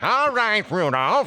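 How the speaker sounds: very high, old-time cartoon character voice. Recalling old cartoons, the speaker does the reindeer trainer: cartoony reindeer-trainer voice. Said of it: "these classic cartoony voices".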